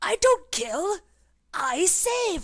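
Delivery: deeply offended, wounded, very high and slow. Re-reading the line after the director asks: really offended. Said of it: "Could you be really offended?".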